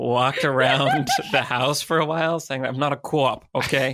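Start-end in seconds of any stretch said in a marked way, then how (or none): 2.7-4.0 put-on terrible Boston accent, slower. Retelling walking around the house denying being a cop, terrible Boston accent. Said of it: "Just doing this terrible Boston accent".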